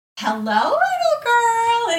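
very high, shrill, swooping sing-song witch voice. Retelling how a babysitter snuck up with a book, in a witchy voice. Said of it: "in this witchy voice".

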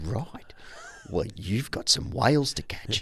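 flat deadpan voice. Retelling how a man answered a bearded interviewee, retelling a deadpan line. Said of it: "completely deadpan".

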